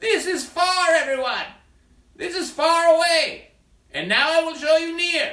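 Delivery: yelling, calling out across a wide distance. A performer demonstrates far to everyone, yelling from far away. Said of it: "he's having to yell louder because he's far away".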